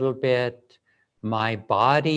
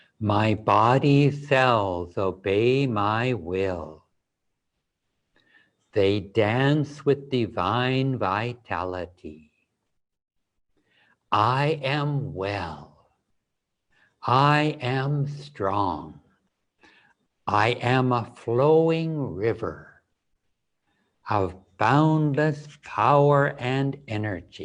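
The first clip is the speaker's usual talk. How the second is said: gentler, softer delivery, speaking softly. Leading an affirmation, the speaker repeats the words in a softer voice. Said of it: "Bring them in a softer voice".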